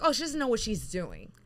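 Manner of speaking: ordinary talk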